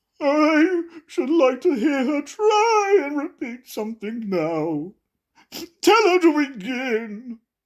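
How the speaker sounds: sounding offended. Narrator reading a story as the Mock Turtle replies, offended tone. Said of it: "The Mock Turtle replied in an offended tone".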